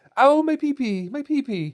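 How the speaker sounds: put-on slow, very high, meek, timid young lad's whine. Imagining what the meek lad would say while tugging himself: imitating meek Dick Grayson. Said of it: "he's such a meek lad ... saying".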